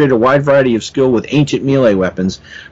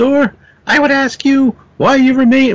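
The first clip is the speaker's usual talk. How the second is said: put-on female voice, much higher; 12 semitones higher than usual. Recounting a scene, the speaker voices Moondragon addressing Thor, bad Moondragon voice. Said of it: "that's not a good Moondragon voice".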